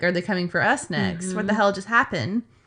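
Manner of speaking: normal talking voice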